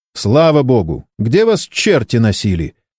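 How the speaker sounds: ordinary delivery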